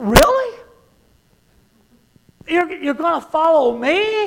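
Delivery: high, disbelieving, incredulous tone.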